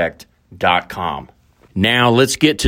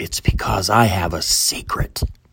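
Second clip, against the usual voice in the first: whispering, quieter, lower; 4 semitones lower, 3 dB quieter than usual. Greeting everybody from the team, whispering. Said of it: "Why am I whispering".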